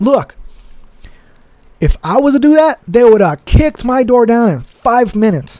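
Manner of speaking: heated, agitated outburst. Venting to the audience about a recent event, getting heated. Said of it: "I'm getting a little heated right now".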